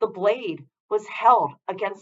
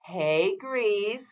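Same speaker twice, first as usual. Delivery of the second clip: soft, sugary, overly friendly, fake-sounding tone; 7 dB quieter than usual. Narrator reads one of a group calling out to Grease, overly friendly voice. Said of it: "one said in an overly friendly voice".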